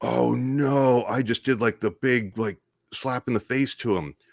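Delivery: booming, loud, drawn-out panic. Retelling waking up after the phone hung up: retelling own panicked words. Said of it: "I just shoot up in a panic going".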